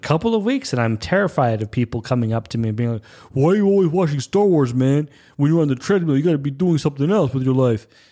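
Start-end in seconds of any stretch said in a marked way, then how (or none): 3.3-7.8 offbeat, weird put-on New York man's accent. Imagining people coming up to them on the treadmill: weird new york accent. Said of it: "I'm doing this weird New York accent".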